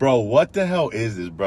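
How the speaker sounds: ordinary delivery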